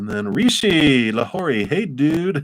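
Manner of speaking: high, loud, excited voice.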